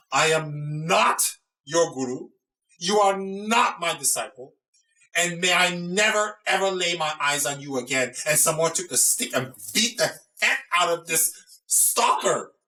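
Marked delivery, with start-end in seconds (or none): 0.1-8.1 furious, high-pitched angry cry. Telling the story, the speaker acts out Tilopa screaming at the stalker: retold angry scream. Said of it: "screamed at him and said".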